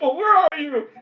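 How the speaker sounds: very high, frantic, panicked little shriek. Acting out a little character calling for someone, mock-panicked little shriek. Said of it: "he shrieks a little".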